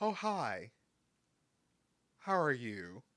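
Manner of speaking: falsely polite, passive-aggressive, fake-friendly tone. Acting out a disliked biggest client greeting you: mock passive-aggressive greeting. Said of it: "one of those passive aggressive".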